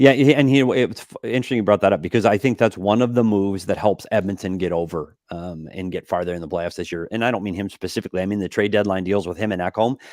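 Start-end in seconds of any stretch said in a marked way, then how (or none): 7.1-8.2 rapid rattled-off speech. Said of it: "You were, you were talking really fast for a while there".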